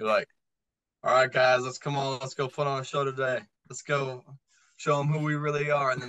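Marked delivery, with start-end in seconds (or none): 1.0-5.9 put-on lackluster, flat monotone. Mocking a locker-room huddle speech, the speaker does a monotone Russell Wilson pep talk. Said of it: "It's just monotone and lackluster".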